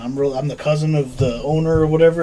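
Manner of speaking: usual speaking voice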